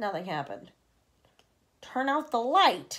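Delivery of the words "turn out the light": raised, drawn-out call. The centipede calls out again after nothing happens, raising his voice. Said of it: "raising his voice".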